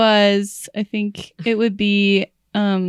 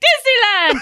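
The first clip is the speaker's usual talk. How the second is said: put-on crazed overexcited voice, higher. Retelling a skit character answering the flight attendant: imitating a crazy Disney adult. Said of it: "pretending to be, like, a crazy Disney adult".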